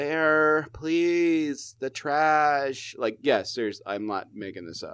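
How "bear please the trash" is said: very slow whiny voice, "trash" drawn out. Retelling what their mom said to them, imitating mom's whiny voice. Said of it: "She has that whiny, like, voice".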